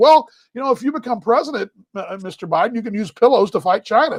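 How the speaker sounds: ordinary talk, nothing marked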